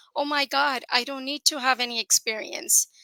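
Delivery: ordinary talk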